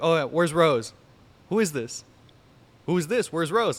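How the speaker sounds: hostile, suspicious angry voice. Retelling answering someone's phone for an unknown number, imitating an angry caller. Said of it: "very very angry back and forth".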